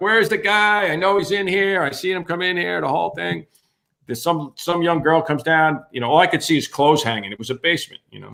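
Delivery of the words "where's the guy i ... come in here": play-acted mild yell, pitched up. Retelling bursting into a basement looking for a man: retelling own yelling. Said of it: "so I start yelling".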